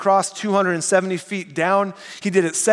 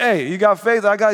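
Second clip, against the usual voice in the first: slow, drawled put-on Italian accent. Voicing an imaginary friend in a pictured conversation, with an italian accent. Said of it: "maybe with an Italian accent or something".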